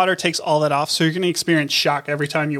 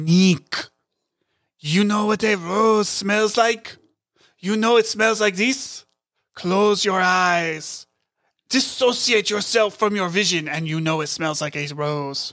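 put-on strong French accent, higher pitch; 3 semitones higher than usual. Retelling what the French wine seller said: imitating Nico's strong French accent. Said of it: "very strong French accent".

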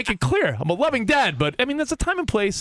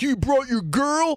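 put-on frat-bro voice, old-school college guy; 4 semitones higher than usual. Describing a night out for drinks when one guy brings his girlfriend, in bro-y college guy voice. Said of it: "sound like the old school bro-y guy in college".

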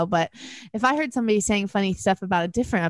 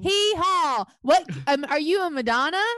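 big, pitched-up country bumpkin character voice; 8 semitones higher than usual. Redoing a podcast intro as a big country bumpkin character: country bumpkin character voice. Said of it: "you be a country bumpkin character".

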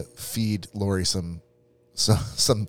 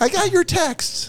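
put-on high-pitched girly voice. Acting out Lori's reply to a text, imitating Lori's high girly voice. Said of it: "high chick voice".

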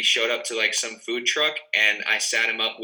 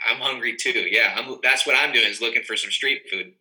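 ordinary delivery

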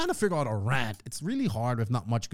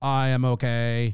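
put-on robotic, machine-like voice; 3 dB louder than usual. Imitating a silent participant answering for him: robot voice imitating Joseph. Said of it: "The robot voice".

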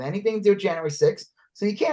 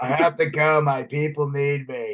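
put-on smoker voice, much lower; 3 semitones lower than usual. Quoting a guy's line while discussing a scene with co-hosts, imitating a smoker's voice. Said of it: "His smoker voice".

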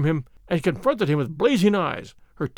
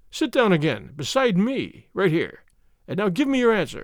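usual speaking voice

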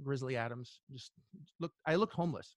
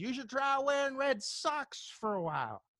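mock, loud, very high shouted call; 11 semitones higher, 3 dB louder than usual. Speaker retells a man calling after him as he staggers away, retelling a man's shout. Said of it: "he shouts at me and says".

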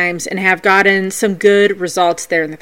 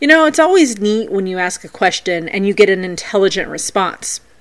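ordinary talk, nothing marked

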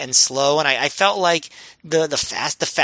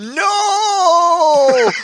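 very high-pitched, long, stretched-out shout; 6 dB louder than usual. Retelling a moment from a match, bad Smokes impression yelling. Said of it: "that wasn't a good Smokes impression".

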